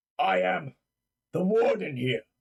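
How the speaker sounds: ponderous, very slow, armored undead guard voice. Voicing an undead creature in armor greeting the players: undead armored guard voice. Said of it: "Be like".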